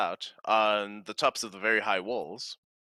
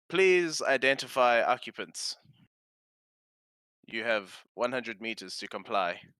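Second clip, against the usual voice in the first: machine-like, automated robot announcer voice. Voicing an automated radio message to approaching occupants, automated robot voice. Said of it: "You can tell it's a robot voice".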